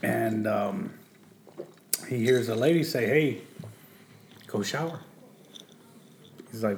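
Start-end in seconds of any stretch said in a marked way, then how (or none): 3.0-5.0 put-on sweet motherly voice, quieter. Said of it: "like, a sweet lady".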